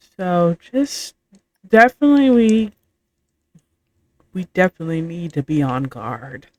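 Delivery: hushed, quiet aside. A player's character speaks to the party so the stranger won't hear: hushed voice. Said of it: "in a hushed voice".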